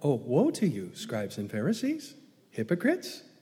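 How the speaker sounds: breezy, friendly, teasing, playful sing-song tone. Showing how a scathing rebuke was not delivered, in a light, playful, friendly tone. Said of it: "It was anything but playful. It was anything but friendly".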